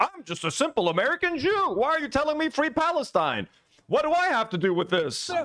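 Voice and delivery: sneering, derisive, mocking delivery in high voice. Reacting to a video, mocking how the other man dodges: mocking imitation of Rabbi Shmuley. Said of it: "When it's inconvenient".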